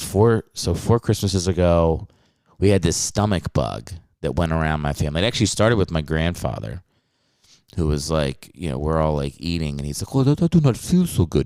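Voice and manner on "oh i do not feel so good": high-pitched put-on French accent. Telling a family stomach-bug story, imitating her sick grandfather: french accent impression of grandfather. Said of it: "that's my impression of him".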